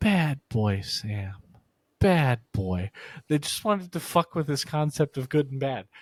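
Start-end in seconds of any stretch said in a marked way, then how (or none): 0.0-2.9 put-on soothing, gentle voice, much slower. Speaker acts out people scolding his uncle, retelling a soothing gentle tone. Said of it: "They would say bad soothingly in a very gentle tone".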